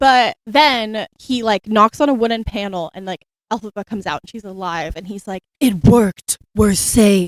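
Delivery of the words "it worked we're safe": slow, sultry, seductive put-on drawl. Retelling a scene where the witch turns out alive: put-on sexy Scarecrow voice. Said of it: "like in his sexy Scarecrow voice".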